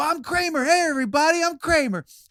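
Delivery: very high, bold, showy announcer-like voice. Retelling how dad jumped into strangers' home videos: imitating dad posing as Kramer. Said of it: "my dad would love to pop in front of their home movie and go".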